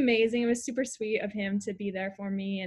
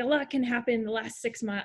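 awful attempt at a New Zealand accent. Retelling what he said to a runner, an awful Nick Willis impression with a New Zealand accent. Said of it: "I can't do a New Zealand accent".

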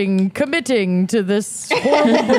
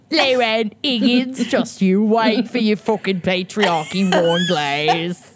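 put-on, mocking Cockney accent; 2 semitones lower than usual. Thanking a donor by name as a joke: put-on cockney accent. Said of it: "Cockney, maybe?".

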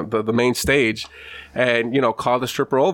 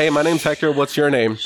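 normal talking voice

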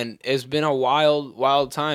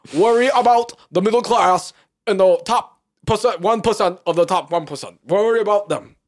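high-pitched, preaching put-on old man voice. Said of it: "That's Bernie".

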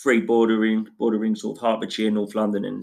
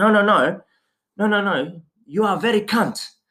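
put-on very high, slow, angry, insistent old woman voice; 10 semitones higher than usual. Retelling how nan insisted again on her words: imitating nan angrily. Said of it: "my nan was angry".

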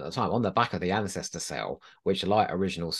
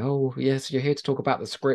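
hesitant, careful, tentative, slightly pitched up; 6 semitones higher than usual. Retelling a story from a book about a phone call, mock-tentative Pip Baker. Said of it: "Pip Baker sort of tentatively saying".

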